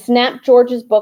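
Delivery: plain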